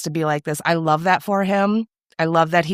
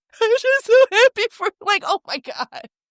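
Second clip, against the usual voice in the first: put-on very high, tearful sobbing voice. Retelling a TV scene where a character breaks down: imitating Pete crying. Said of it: "he's crying and he's telling Sugar".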